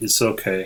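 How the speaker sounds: soft, quiet, resigned, given-up murmur. Retelling own reply after the apology: imitating own quiet resigned reply. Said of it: "in the very same tone".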